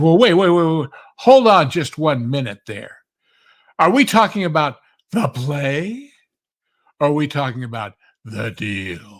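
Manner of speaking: loud, contemptuous sneer with "play" stretched out. Retelling how a young actor in the front row challenged the speaker, imitating a sneering voice. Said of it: "gets up with this sneer in his voice".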